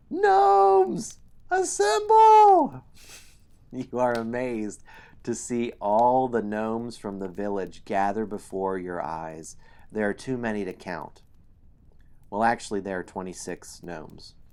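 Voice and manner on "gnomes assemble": shrill, very high, full-volume gnome yell. A narrator voices a gnome raising its arm to call others, gnome yelling. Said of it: "The gnome raises its arm and yells".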